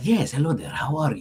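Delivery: wary, distrustful, suspicious voice. Demonstrating the voice made for a shopkeeper character, suspicious shopkeeper voice. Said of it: "he sounds very suspicious".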